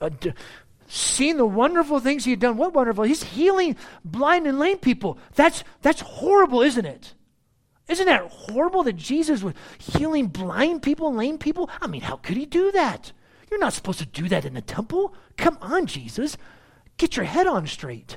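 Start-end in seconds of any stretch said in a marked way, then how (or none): 2.6-18.2 feigned indignation thick with sarcasm, swooping pitch. Preaching on a bible verse, speaking sarcastically: sarcastic mock outrage. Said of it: "I'm being sarcastic".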